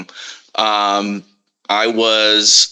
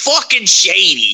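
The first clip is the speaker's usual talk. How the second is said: said pitched up, pointed and emphatic; 9 semitones higher than usual. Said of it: "that's actually a very good impression".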